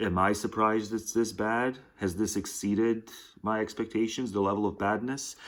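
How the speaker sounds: plain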